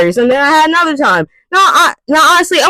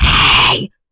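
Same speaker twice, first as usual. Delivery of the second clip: mock breathy loud whisper with hard breathing. Mocking people who whisper too hard in a library: imitating a breathy loud whisper. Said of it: "except there's more breath".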